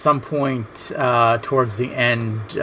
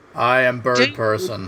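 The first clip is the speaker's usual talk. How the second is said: put-on flat bird-creature voice. Doing a cartoon-character impression: Birdperson impression. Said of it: "you guys are spot on".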